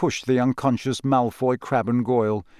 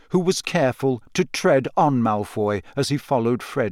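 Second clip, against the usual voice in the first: plain reading voice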